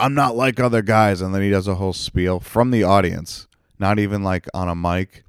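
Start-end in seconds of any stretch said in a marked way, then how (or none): 0.0-1.2 mocking, blurted, jeering shout. Retelling an audience member yelling out during a show, imitating someone yelling. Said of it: "he just yells out like".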